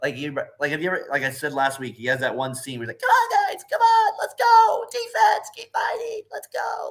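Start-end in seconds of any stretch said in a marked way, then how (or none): 3.0-6.9 thin, very high, unhurried voice. Acting out a scene with a guy whose voice you love, imitating his high-pitched voice. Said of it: "I love his high pitched voice".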